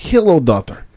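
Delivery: put-on Russian accent. Retelling how my wife answers her daughter: imitating a russian accent. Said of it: "having the entire conversation in Russian accents".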